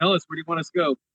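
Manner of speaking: rushed, hurried, urgent, pressing. Retelling how they asked 'it' where to go, the speaker uses a hurry voice. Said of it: "in a hurry voice".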